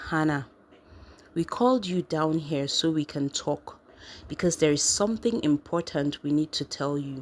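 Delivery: ordinary delivery, nothing marked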